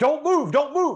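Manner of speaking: shrill, very high, loud, full-throated scream. Retelling a raid where a cop stood over him, imitating a cop screaming. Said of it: "he is screaming at the top of his lungs".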